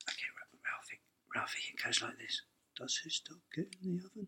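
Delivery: whispering voice. Retelling how the director whispered a line reading in the actor's ear: imitating Bruce whispering. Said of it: "he'd whisper in your ear. He goes".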